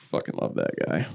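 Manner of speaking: ordinary talk, nothing marked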